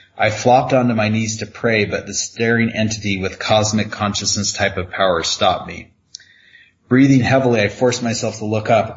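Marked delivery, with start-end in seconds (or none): none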